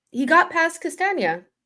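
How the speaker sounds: very high, drawn-out, slow, sneering snide tone. Answering the other speaker's complaint about an unmentioned nutmeg: snide tone. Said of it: "Why are you saying it in a snide way?".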